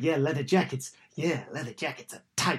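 tight, agreeable delivery. Imitating the guy from the pretend pitch meetings: Screen Rant pitch meeting guy impression. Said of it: "You sound like that guy on, what is it, on Screen Rant on YouTube".

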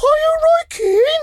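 very high, slow, ladylike put-on lady's voice. Retelling how a lady approached in a lounge, in a put-on lady's voice. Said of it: "That's me doing my lady's voice there".

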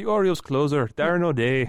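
put-on Irish accent. Asked to do one of your best voices, say a player's name in an irish accent. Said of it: "I like saying it in the Irish accent".

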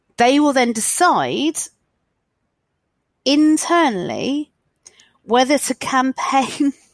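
high, slow, pained voice. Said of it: "you can hear the pain in my voice".

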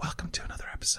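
soft, unvoiced whisper. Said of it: "This is a secret".

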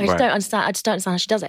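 ordinary delivery

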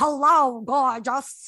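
put-on heavy Brooklyn accent. Recounting how a woman greeted her, imitating her in a deep Brooklyn accent. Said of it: "it was like deep Brooklyn".

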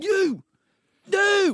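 put-on very high, frantic, wild screaming. Retelling a girlfriend throwing clothes at him mid-run: imitating someone screaming. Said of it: "just screaming and whatever".

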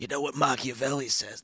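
put-on raspy voice. Doing a voice to quote what machiavelli says: put-on raspy voice. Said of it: "I like this voice".

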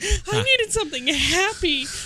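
mock crying voice. Retelling crying under the covers over a depressing book: retelling own crying.

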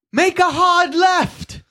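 shrill, loud, high screeching voice. A game narrator voices Willow shouting at a player: Willow screeching. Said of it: "Willow screeches at you".

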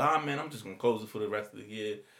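ordinary talk

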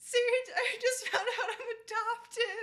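very high, very loud sobbing wail. Retelling how a crying young brother announced his adoption: imitating David crying. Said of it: "he was crying and he was like".

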